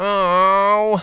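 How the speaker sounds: whiny, very high, drawn-out oh moan.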